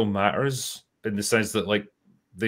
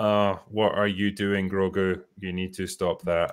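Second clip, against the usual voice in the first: mock half-hearted, unenthusiastic line delivery; 3 semitones lower, 4 dB quieter than usual. Imitating an actor phoning in a line from a villa: imitating a half-hearted line reading.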